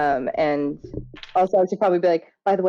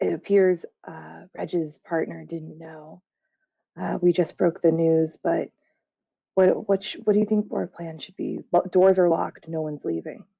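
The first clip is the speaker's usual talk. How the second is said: hushed stage whisper. Playing a scene, speaking to Zell, in a stage whisper. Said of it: "stage whisper".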